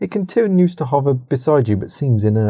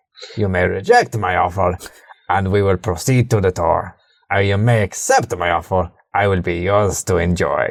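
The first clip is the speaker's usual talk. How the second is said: put-on robotic voice with a Polish accent; 6 semitones lower than usual. Voicing a calm servitor making an offer to a player: Polish robot accent. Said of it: "I fucking love that accent".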